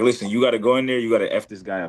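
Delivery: put-on angry outburst. Retelling the coach's backstage talk before the fight: imitating the coach getting mad. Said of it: "he got mad".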